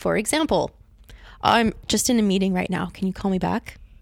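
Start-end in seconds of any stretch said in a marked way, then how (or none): none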